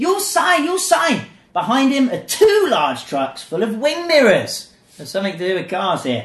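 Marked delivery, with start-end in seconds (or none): 0.0-1.2 put-on very high, pushy, insistent repeated yell. Narrating how a man at the door thrusts a clipboard at the man who answered, retelling a shout.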